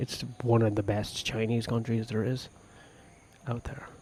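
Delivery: hushed whisper. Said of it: "Why are you whispering?".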